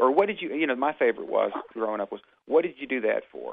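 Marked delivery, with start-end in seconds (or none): 2.4-3.5 mock accusatory tone. Recalling a question heard while growing up, in a mock-accusatory tone. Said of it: "In almost an accusatory tone".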